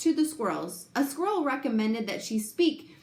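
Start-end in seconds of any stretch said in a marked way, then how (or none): none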